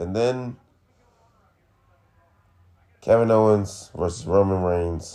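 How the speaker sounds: disappointed, underwhelmed, let-down tone. Talking through wrestling matches with someone, disappointed. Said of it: "Why you sound so disappointed?".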